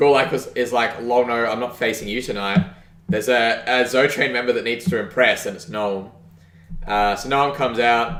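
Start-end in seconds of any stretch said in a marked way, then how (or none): none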